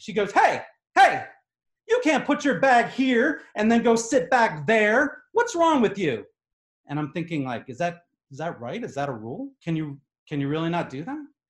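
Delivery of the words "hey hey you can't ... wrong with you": mock screaming, high-pitched. Retelling a woman in row three who jumped up at the speaker, imitating a woman screaming. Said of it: "she starts screaming at me".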